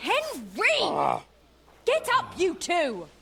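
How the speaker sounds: urgent, rousing, high, swooping cry with one word drawn out. A drama character wakes henry and another sleeper, screaming. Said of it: "Stop screaming".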